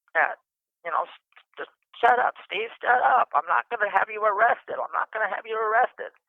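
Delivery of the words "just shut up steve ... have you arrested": high yelling, repeated over and over. Retelling being attacked by a man threatening to kill them, retelling own yelling. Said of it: "And I'm yelling at him".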